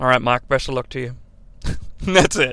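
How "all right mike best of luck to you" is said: put-on serious voice, much lower and quieter. Retelling how Shane and JR replied to a caller, imitating Shane and JR's serious voices. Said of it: "Shane and JR get their serious voices".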